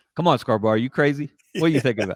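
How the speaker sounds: put-on incredulous, doubting disbelief. Retelling how the guest reacted on the phone: imitating Steve's disbelief. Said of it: "I detected a little disbelief in your voice".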